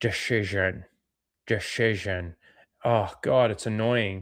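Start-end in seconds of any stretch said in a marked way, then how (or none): 0.0-2.3 low, lisped Russian accent spoken through clenched teeth. Mocking how a movie villain says a word: through teeth, lisp, russian accent. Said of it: "trying to say the word decision like that through his teeth with a little bit of a lisp, with a bit of Russian".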